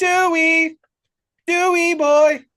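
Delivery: very high, loud, flat robotic calling. Retelling a robot calling a dog in another's voice: imitating Megan's robotic dog call. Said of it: "it's got that robotic undertone".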